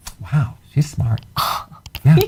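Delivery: astonished, caught-off-guard surprised tone. Reacting to a correct quiz answer about bile: surprised. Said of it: "You sound so surprised".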